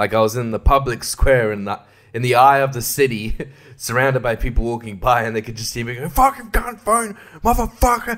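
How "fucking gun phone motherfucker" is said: put-on furious, very high angry yelling. Sitting in a car in public, mock angry yelling at the phone. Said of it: "when I get angry at my phone ... I'm yelling".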